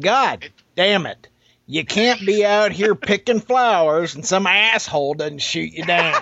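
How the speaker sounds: put-on twangy voice. The speaker retells what a guy he shot said, imitating the guy's twang. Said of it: "he had this twang".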